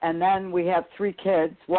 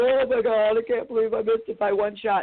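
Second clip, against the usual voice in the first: tearful, upset, dismayed crying; 5 semitones higher than usual. Retelling a phone call to Alan while driving home after a qualifier, retelling crying on the phone. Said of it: "I'm crying to Alan".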